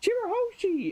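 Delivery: put-on very high, shrill scream. Recapping a page where rescuers arrive for a princess, retelling a scream of a name. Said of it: "Rebecca's screaming like".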